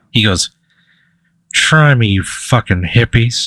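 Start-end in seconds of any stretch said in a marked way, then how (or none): 1.6-3.5 muttered quietly under the breath. Voicing a character heading off into the chaos: muttered under his breath. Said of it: "you hear him under his breath".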